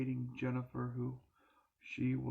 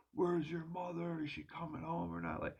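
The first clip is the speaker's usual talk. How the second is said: put-on raving madman's scream, high and wild; 5 semitones higher than usual. Recalling a man dragging them out of bed at night: imitating someone screaming. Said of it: "he would be screaming".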